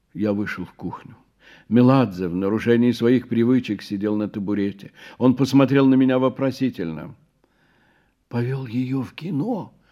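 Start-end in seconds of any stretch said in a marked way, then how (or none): 8.2-9.6 hushed, half-whispered complaining tone. In the kitchen, the narrator complains to Meladze, half-whispered complaint. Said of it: "шепотом пожаловался я".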